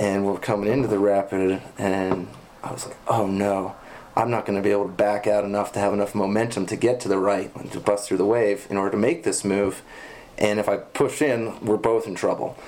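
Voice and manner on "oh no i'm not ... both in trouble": ordinary talk, nothing marked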